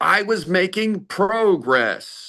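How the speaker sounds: high, yelled, bad fake American accent. Reviewing a film scene, the speaker quotes an actor, mimicking a scream in bad American accent. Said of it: "he just screams".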